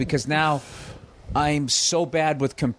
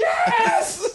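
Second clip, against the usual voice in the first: put-on shrill, very high, shouted scream. Retelling shouting at a phone robot that didn't understand: imitating own screaming.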